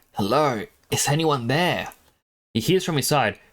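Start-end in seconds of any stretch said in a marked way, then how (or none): 0.2-1.9 hoarse croaking voice. Reading a story where a parched man calls out: croaking. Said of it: "He croaks out".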